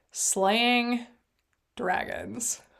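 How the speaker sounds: words breaking up with laughter. Recalling a thought that popped into mind: laughing while speaking. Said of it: "I can't even say it without laughing".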